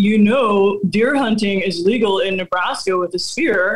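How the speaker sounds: plain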